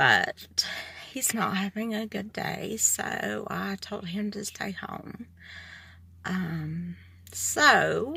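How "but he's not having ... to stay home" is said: nervous, on the edge of crying, holding back tears. Explaining that he wanted to come but stayed home today: trying not to cry. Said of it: "I'm nervous and I'm trying not to cry".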